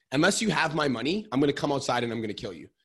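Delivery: loud, threatening, going-ballistic, top-of-the-lungs yell. Speaker acts out what a man yelled at them, retelling a yell. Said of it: "And he was yelling, top of his lungs".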